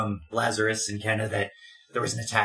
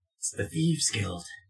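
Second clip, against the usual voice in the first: hushed, close, secretive whisper. Getting close to a character and telling him a secret: whispering. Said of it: "whisper into his ear".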